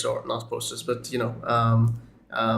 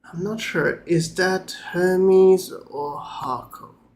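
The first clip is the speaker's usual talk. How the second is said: very calm bishop voice, higher; 7 semitones higher than usual. Voicing a pale bishop welcoming the group: very calm bishop voice. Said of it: "as he says very calmly".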